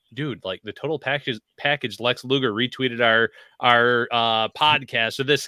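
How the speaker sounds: ordinary delivery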